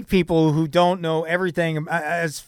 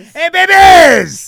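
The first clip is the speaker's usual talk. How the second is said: put-on hyped, over-the-top radio DJ voice, higher, louder; 13 semitones higher, 11 dB louder than usual. Echoing a hyped DJ greeting off air: put-on hyped radio DJ voice. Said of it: "I'm not Wolfman Jack in the grocery store".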